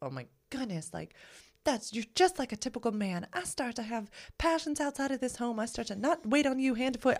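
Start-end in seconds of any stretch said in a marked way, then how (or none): 1.6-7.2 very high, put-on Southern accent. In a role-play addressing someone as a typical man, speaking in a Southern accent. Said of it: "you did it with a Southern accent".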